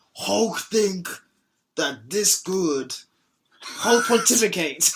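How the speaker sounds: put-on very slow, drawn-out Nigerian accent. Imagining how Hulk would talk, the speaker does a Hulk voice sliding into Nigerian. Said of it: "You're you're like just sliding into like a Nigerian accent".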